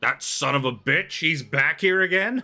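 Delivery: angry male voice. Narrating a scene by docked ships, voicing a man on a nearby ship: angry loud male voice. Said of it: "some angry, loud male voice".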